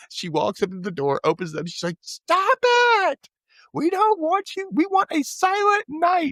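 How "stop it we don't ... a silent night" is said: mock very high, very slow, drawn-out yell. Retelling a character yelling at carolers at the door: imitating someone yelling. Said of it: "she gets up to yell at them".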